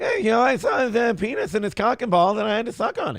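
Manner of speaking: bad high-pitched voice with a lisp. Showing how the bit sounds when it gets dirtier: bad Jay Leno voice. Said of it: "That's not a very good Jay Leno".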